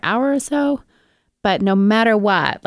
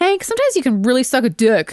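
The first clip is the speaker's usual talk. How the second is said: mock exasperated, pitched-up, fed-up tone; 5 semitones higher than usual. Recounting walking up the stairs with their dog Hank, retelling saying it very loudly. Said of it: "I say very loudly".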